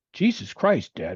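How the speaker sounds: sweet, loving little voice. Retelling what their young son said to them on the way to daycare: imitating a loving little voice. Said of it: "In this loving little voice".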